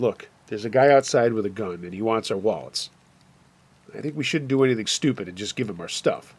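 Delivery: plain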